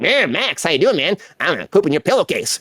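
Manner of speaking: swooping, talking cartoon rabbit character voice. Recalling voicing a talking rabbit on a kids show: talking rabbit voice. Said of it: "There's a talking rabbit on there".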